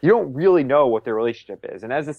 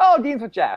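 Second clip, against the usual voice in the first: put-on very high, bright, sudden cheery snap; 10 semitones higher than usual. Retelling how she snapped out of sobbing when asked where Dean is; put-on cheery snap. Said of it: "she snaps out of it so cheerily".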